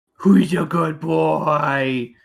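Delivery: dog-talk voice. Asked to show their talk-to-dogs voice, the speaker uses a talking-to-a-dog voice. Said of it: "what's your talk to dogs voice go?".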